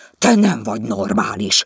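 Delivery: loud, sharp, barking, snapping tone. Vizi to his wife, who is kneeling up in bed shouting, snapping at her. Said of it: "rivalt rá Vizi".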